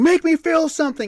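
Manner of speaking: loud yelling voice. Retelling a game fight, imitating own past yelling.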